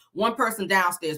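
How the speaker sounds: normal talking voice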